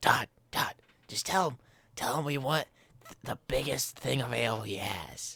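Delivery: hushed, whispered speech. Game player addressing the companion riding on their shoulders, whispering. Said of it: "I just like whisper to Todd".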